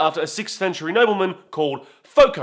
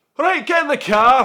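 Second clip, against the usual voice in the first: put-on Scottish accent, pitched up; 7 semitones higher, 3 dB louder than usual. Trying out different accents for a joke, the speaker switches to a Scottish accent. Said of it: "What about Scottish?".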